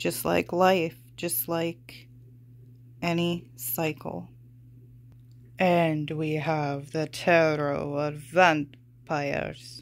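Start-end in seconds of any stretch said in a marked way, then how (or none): 5.6-9.8 bad put-on vampire count voice. Tarot reader introducing the next deck: bad Dracula voice. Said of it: "that was a bad Dracula voice".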